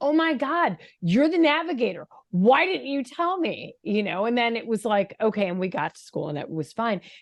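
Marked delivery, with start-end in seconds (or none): 0.0-3.4 put-on snapping raised voice, higher pitch. Retelling snapping at the navigator in the car: imitating own raised voice. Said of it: "my voice raised".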